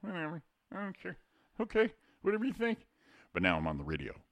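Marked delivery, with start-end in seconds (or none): 0.0-2.9 very high, meek, couldn't-care-less voice. Contrasting his radio voice with how he talks at home, mock-meek quiet at-home voice. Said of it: "that meek, quiet [name]'s at home going".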